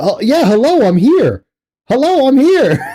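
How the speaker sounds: high-pitched, snide, sarcastic tone. Imitating how a friend answered on a call, imitating Phil. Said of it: "Phil over there".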